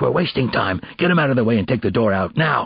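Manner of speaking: harsh, rasping whisper. Narrating Howman ordering officers to clear a door, in a harsh whisper. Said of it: "whispered in a harsh voice".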